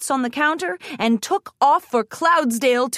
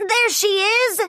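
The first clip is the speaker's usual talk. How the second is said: high, squeaky, small little filly voice; 9 semitones higher than usual. Narrating a pony story, a filly spots someone in the sky, in Sweetie Belle's squeaky filly voice. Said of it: "squeaked Sweetie Belle in her little filly voice".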